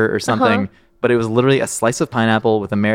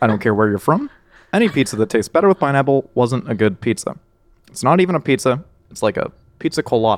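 slightly nasal late-night talk-show host voice; 2 semitones higher than usual. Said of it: "that's a Jimmy Kimmel impersonation".

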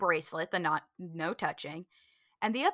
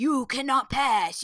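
put-on scary voice, higher, slower; 4 semitones higher, 6 dB louder than usual. Retelling a story where a scary figure blocks a friend's way: imitating a scary person. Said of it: "one of the scary people comes out and is like".

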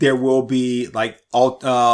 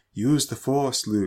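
put-on ghostly voice, quieter; 6 dB quieter than usual. Quoting a Star Wars moment in Obi-Wan voice. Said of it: "Obi-Wan's voice appears".

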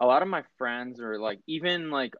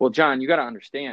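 plain

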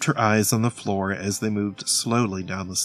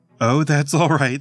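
giggling, higher pitch and louder; 5 semitones higher, 5 dB louder than usual. A lady answers Lionel, who caught her butterfly, giggling. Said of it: "the lady giggled".

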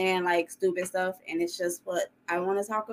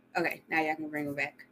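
plain

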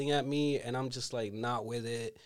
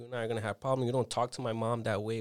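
ordinary talk, nothing marked

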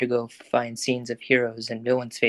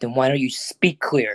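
annoyed, irritated snapping tone. Called a name by another, he snaps back in irritation. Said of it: "Deku snapped back in irritation".

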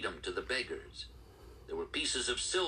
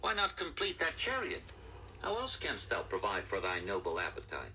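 ordinary delivery

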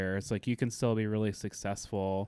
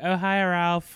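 chummy, high-pitched and loud; 8 semitones higher, 6 dB louder than usual. Retelling how Priyanka greeted Ralph: imitating Priyanka. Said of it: "She's like".

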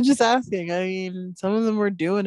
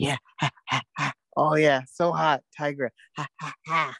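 put-on panting breath. Imitating someone who is over there panting: imitating someone panting. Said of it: "he's over there just panting".

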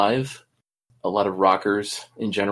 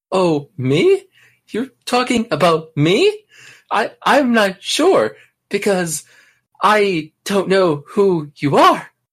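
very high, sing-song, swooping woman's voice; 10 semitones higher, 7 dB louder than usual. On a show, one participant takes his turn impersonating a woman: impersonating a woman. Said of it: "That's pretty good, man".

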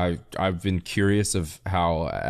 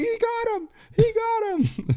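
mock thrilled cry, voice breaking very high. Recounting a baseball play, the speaker imitates Harold's excited voice crack. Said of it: "He got so excited".

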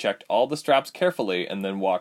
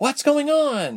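frightened, scared, very high voice; 4 dB louder than usual. As Tyke hides his work and takes off his goggles, Ilse asks, frightened.

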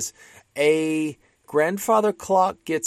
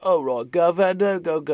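terrible fake Cockney accent, slower; 3 semitones higher than usual. Describing how a famous performer once spoke, attempting a bad Cockney accent. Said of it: "I cannot do a Cockney accent".

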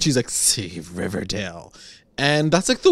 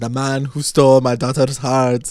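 bad put-on Spanish accent drifting into Indian accent. Retelling a scene where a character greets Archie, in a put-on Indian-sounding accent. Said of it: "you're giving him like 8 different accents. Now he's like Indian".

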